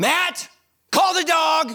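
exasperated, very high, very slow, drawn-out. Retelling what the wife says when the dog won't respond: imitating a frustrated wife. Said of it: "when she gets super frustrated with me".

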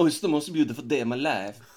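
high, goofy cartoon rabbit voice. Describing a game character picking up a trophy: Rabbid Mario voice. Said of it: "Rabid Mario is hilarious. ... he's like".

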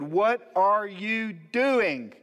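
very slow, drawn-out, all-out loud shout. Retelling how he shouted a question at God, retelling a shout. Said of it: "I shouted it, you know, as loud as I could".

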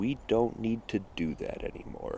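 very slow, drawn-out, hushed, talking-down whisper. Retelling what the elders answered when asked to teach them: spoken very slowly. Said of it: "said very slowly".

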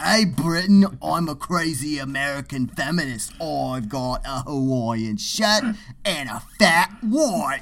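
put-on American accent drifting into an Australian-ish accent. Speaker acts out a man on Good Morning Britain, accent drifting into Australian. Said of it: "You kind of veered into Australian there".

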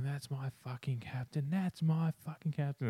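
mock, high, drunken yelling. Retelling cheering at a game while drunk: retelling a drunken yell. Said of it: "I was yelling".

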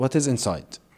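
acted-out furious, very angry, hostile tone. Retelling how a soldier stopped the speaker and asked: imitating a very angry tone. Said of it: "In a very angry tone".

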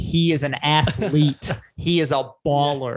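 clumsy, very slow, bad put-on American accent. Praising a basketball player, speaker puts on a bad American accent. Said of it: "There's my shitty American accent for everybody".

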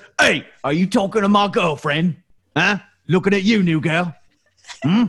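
hulking orc voice. In a role-play scene, an orc walks up from behind to confront the new girl; big orc voice. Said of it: "a big orc walks up from behind and says".

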